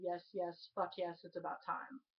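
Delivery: normal talking voice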